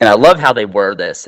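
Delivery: ordinary talk, nothing marked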